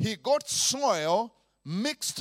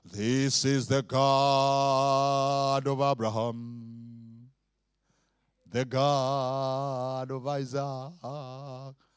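over-dramatic, very deep slow voice; 8 semitones lower than usual. The speaker shows how God does not speak, in a mock dramatic God voice. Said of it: "God does not speak like this".

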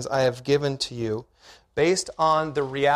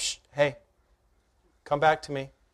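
acted gentle, soft whisper; 4 dB quieter than usual. Voicing god calling someone back to him: acted gentle whisper. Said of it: "it was a gentle whisper that s-, that just said".

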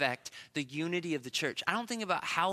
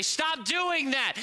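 mock harsh scolding shout, high pitched; 9 semitones higher, 5 dB louder than usual. A parent shows how easy it would be to yell at her daughter: yelling. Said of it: "so easy for me to just yell".

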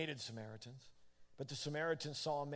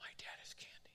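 imitated loud whisper. Retelling what a child told a group of kids: imitating a loud whisper. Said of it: "I heard her whispering really loud".

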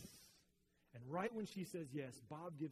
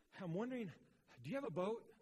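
put-on huffing, breathless, high, loud gasping; 6 semitones higher, 5 dB louder than usual. Retelling Ryan arriving to ask for a boat: imitating someone out of breath. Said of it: "huffing and puffing ... he can, like, hardly breathe".

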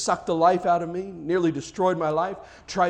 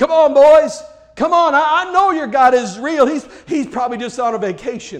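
booming, loud, drawn-out, jeering mocking tone; 8 semitones higher, 11 dB louder than usual. Retelling how a man began mocking a group of men: retelling a mocking taunt. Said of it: "he began mocking them".

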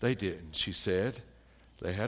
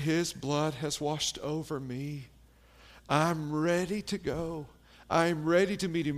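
put-on strained, labored voice, pitched higher; 6 semitones higher than usual. Retelling a dying man's words about meeting Jesus: imitating a labored voice. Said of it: "he said it with a labored voice".

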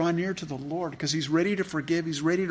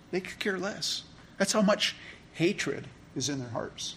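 ordinary delivery

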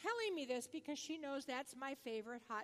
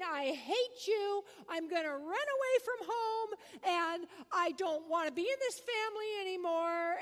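put-on loud, furious screaming tantrum like a flipping-out kid; 4 semitones higher, 8 dB louder than usual. Retelling how a child screamed at his family: imitating a child screaming. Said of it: "He started screaming".

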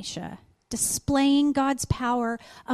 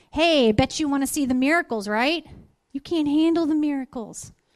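imitated sarcastic tone. Retelling a story in which someone starts getting sarcastic: imitating a sarcastic remark. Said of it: "he starts getting a little sarcastic".

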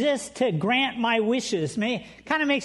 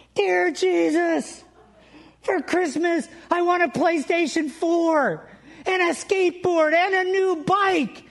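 put-on little boy voice, loud, high, shouting at full volume; 7 semitones higher than usual. Telling a joke where a little boy kneels to pray, retelling a shout at the top of his lungs. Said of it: "praying at the top of his lungs".

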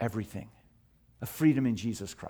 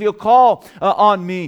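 higher, louder, raised proclaiming voice. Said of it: "He says".

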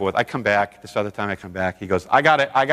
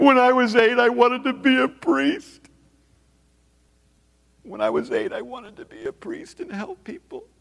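put-on crying voice, pitched higher; 12 semitones higher than usual. Retelling a client on the floor of the office, imitating someone crying. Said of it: "crying and crawling around".

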